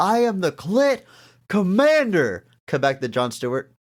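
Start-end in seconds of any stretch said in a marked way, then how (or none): 0.0-2.5 mock very high screech, stretched long. Retelling a video clip: imitating Jason Mewes screaming. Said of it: "Jason Mewes screaming".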